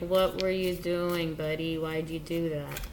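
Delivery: normal talking voice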